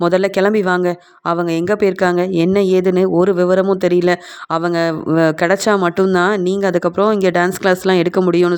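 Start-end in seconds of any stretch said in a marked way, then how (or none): none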